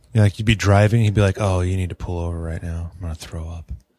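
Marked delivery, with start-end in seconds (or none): 1.4-3.7 dead calm, low and soft, no fuss at all. Retelling what he'd say while you were driving, imitating his calm voice. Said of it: "All calm and shit".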